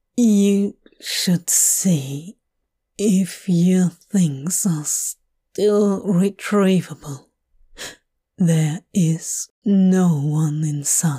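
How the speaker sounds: rough, slow, rasping, effortful voice. A stranger speaks to Hob outside a warehouse, rasping. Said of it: "He jerks his chin towards the warehouse and rasps".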